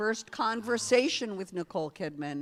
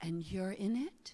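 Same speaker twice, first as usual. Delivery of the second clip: put-on wispy voice, much quieter; 7 dB quieter than usual. Retelling a woman's reaction to their tv series, imitating her wispy voice. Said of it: "She has a very wispy voice".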